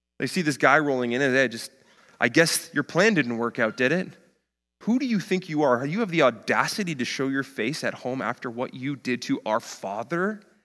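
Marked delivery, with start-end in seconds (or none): 2.2-10.4 accusing, blaming, confrontational, jeering delivery. Acting out the people the son abandoned confronting him: accusing voices. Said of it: "The accusing voices are ringing in his ears".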